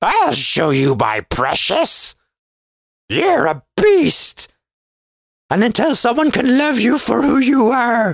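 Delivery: high-pitched wise-master voice, pitch swinging high and wide. Acting out a witch cursing the Beast: Yoda voice. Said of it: "into Yoda mode there".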